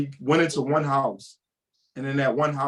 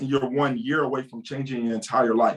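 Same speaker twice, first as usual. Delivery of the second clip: normal talking voice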